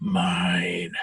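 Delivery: sibilant creature hiss, pressed hard, emphatic. In a tabletop game, the narrator voices a character hissing emphatically. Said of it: "he just hisses even even more emphatically".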